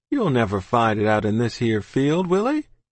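plain reading voice

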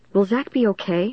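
ordinary delivery, nothing marked

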